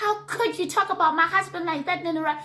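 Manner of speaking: high, upset, indignant, wounded, accusing woman's voice. Retelling an angry confrontation at a reunion, imitating Missus Mops's voice. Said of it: "Is that mean to imitate her voice?".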